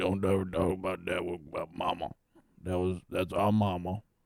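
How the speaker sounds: gritty, brash, short, deep, gruff farmer voice. Retelling how Teddy would really have answered: gruff gritty farmer voice. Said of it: "gritty farmer".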